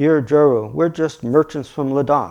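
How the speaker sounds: usual speaking voice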